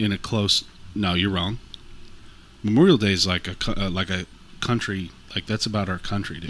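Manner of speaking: ordinary talk, nothing marked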